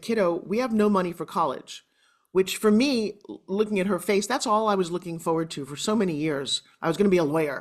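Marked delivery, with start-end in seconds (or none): none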